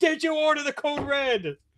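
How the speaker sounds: very high, very slow, deliberate delivery. Practicing a courtroom speech from a film: Tom Cruise impression. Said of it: "my Tom Cruise speech from, uh, A Few Good Men".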